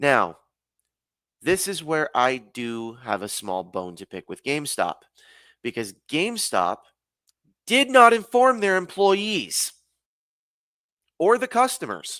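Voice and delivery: angry, upset, worked-up aggrieved tone, rising. A customer speaking about a changed release date; angry and upset tone. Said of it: "saying this in a very angry and upset tone".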